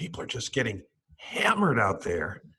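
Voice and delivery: animated voice with wide, swooping pitch swings. Imitating the guest to write a closing banner line: imitating Marty McCary. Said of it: "I'm gonna try to imitate you".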